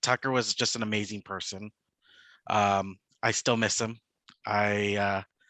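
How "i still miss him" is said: ordinary talk, nothing marked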